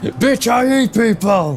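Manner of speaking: mock monster roar, high, loud and slow.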